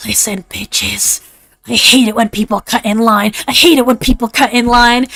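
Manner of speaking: seething, angry stage half-whisper. Speaker tries out what angry asmr might sound like: angry half-whisper. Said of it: "am I like whispering angry?".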